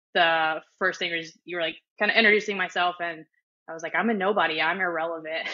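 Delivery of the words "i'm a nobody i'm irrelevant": plain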